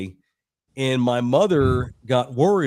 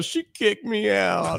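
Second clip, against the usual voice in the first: high, drawn-out mock breakdown; 7 semitones higher than usual. Retelling climbing into the car as the stepdad turns around: imitating breaking down. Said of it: "I just lose my shit".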